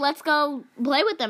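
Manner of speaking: usual speaking voice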